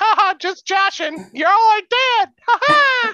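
mocking, put-on evil high cartoon mouse voice. Imitating how the game master said everything seems okay: evil Mickey Mouse voice. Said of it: "Evil Mickey Mouse".

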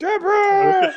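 put-on sitcom dad yell. Joining a joke about a crying creature by doing a Ray Romano voice. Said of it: "he sounds like Everybody Loves Raymond".

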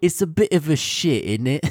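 playful fake British accent. Sharing favorite british phrases used at home, put-on british accent. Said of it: "sounds really fun in a British accent".

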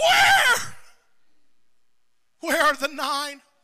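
deep anguished cry, swooping in pitch. A preacher quotes Jesus to his listeners: retelling an anguished cry. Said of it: "We can hear the anguish in Jesus' voice".

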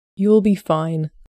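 calming, comforting, soothing, reassuring tone. A smoking man answers an expectant first-time father in a soothing tone. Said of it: "his tone soothing".

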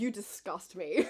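put-on aggressively hateful woman's voice. Retelling a woman who hated someone on holiday: imitating an aggressively hateful woman. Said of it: "this woman so aggressively hating Darren".

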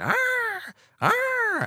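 high, shrill zebra cry. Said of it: "it's like".

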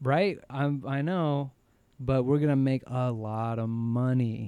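ordinary delivery

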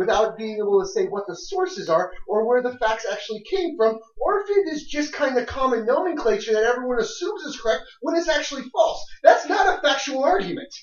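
intense, very high-pitched, rising ranting. Arguing that the claim is not a factual argument, voice rising high. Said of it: "how high his voice got right there".

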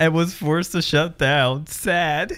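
trying not to laugh. Reading a tweet aloud to another speaker, trying not to laugh. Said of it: "try and read it without laughing".

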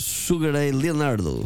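put-on Portuguese accent. Asked by another speaker, someone says a player's nickname in a Portuguese accent. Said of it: "but in a Portuguese accent".

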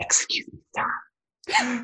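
soft, close, whispered ASMR-style voice. Describing a 13-year-old girl's videos, the speaker imitates Life with Mac's ASMR voice. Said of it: "this ASMR".

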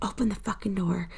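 soft, hushed whisper. Retelling someone whispering through a closed door: imitating someone whispering. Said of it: "I remember him whispering".

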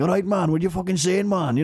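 put-on rough, very broad Welsh accent, laid on thick. Recalling a tv show watched when younger, imitating a broad welsh accent. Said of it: "very broad".

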